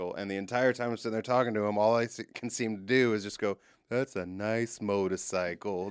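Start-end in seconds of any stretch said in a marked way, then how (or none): 3.9-5.9 put-on mutter under breath, quieter, slower. Retelling a talk with a friend, retelling muttering under breath. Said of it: "But I'm doing it under my breath".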